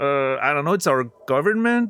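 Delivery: mock faltering, hesitant, unsure, unconfident. Imitating a game character who answers questions unsure: imitating a hesitant speaker. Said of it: "But she sounds hesitant".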